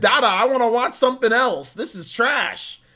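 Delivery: put-on cross, fed-up, mad tone. Imitating someone who gets mad at the show: imitating someone mad. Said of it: "gets mad at me and says".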